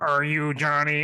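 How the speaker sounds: loud, robotic electrolarynx voice-box speech. Retelling a man at the backyard gate holding a box to his neck, imitating an electrolarynx voice. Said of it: "so he puts a box to his neck".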